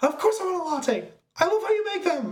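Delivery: mock yelling at a very high pitch. Act out the latte answer from the trailer for a friend, imitating Jim Carrey yelling. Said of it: "And he's just yelling".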